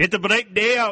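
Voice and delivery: put-on Welsh accent. Practicing accents in turn, the speaker tries the third one: a welsh accent. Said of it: "the third one was Welsh".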